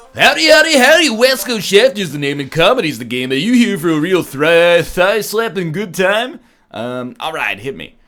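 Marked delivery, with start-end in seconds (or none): 0.2-6.4 loud, pitched-up radio DJ announcer voice. Trying the same opening lines again, now in a radio DJ voice. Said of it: "a radio D J voice".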